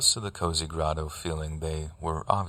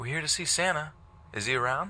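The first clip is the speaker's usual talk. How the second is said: bright, very high, cheerful voice; 11 semitones higher than usual. Retelling arriving at a caravan with the kids, the speaker repeats what they asked: retelling in cheeriest voice. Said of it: "in my cheeriest voice I ask".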